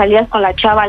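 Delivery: ordinary delivery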